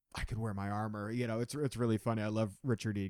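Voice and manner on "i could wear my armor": put-on excited voice, quieter. Retelling the scene where James realizes he could wear armor: imitating James excited. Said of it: "He is so excited".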